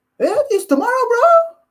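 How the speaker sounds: very high, squeaky put-on guy voice. Retelling a conversation, quoting Yoel's reply: Yoel's high voice. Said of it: "He goes like his all high voice".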